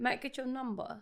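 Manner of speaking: British accent, put on for show. Playing out asking someone for their number, in a british accent. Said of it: "say it in the British accent?".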